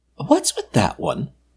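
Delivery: whispering. A woman curled up on the bed with Walter, noticing the robot, whispering. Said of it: "she whispered".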